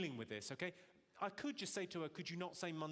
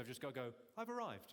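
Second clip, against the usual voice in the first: usual speaking voice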